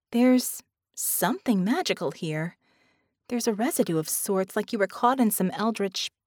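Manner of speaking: plain reading voice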